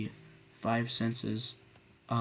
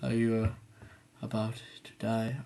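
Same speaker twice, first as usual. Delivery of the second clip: mocking put-on tired, drowsy voice. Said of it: "you sound kinda like this".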